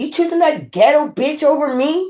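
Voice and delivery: high-pitched, accusing, confrontational woman's voice. Acting out a woman asking her man if he picks another woman: imitating a woman confronting her man. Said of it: "that would be like some chick be like".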